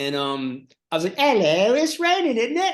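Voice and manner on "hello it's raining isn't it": very high, put-on English accent. Retelling an old stage bit with an umbrella: english accent. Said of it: "an English accent".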